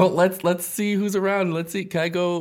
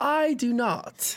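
high, fancy put-on disguised voice; 8 semitones higher, 3 dB quieter than usual. A player answers an elf innkeeper asking about a reservation, fancy disguised voice. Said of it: "fancy Ren".

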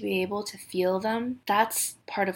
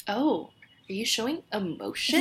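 ordinary talk, nothing marked

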